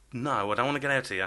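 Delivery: ordinary talk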